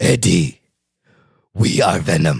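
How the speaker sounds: very deep, low, slow, deliberate monster voice. Trying an impression of a movie monster: Venom voice impression. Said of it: "That's not bad".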